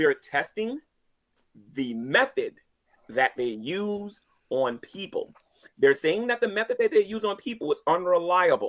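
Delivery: said very slowly and deliberately. Repeating a point to a listener a second time, saying it real slow. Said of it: "I'm gonna say it real slow this time".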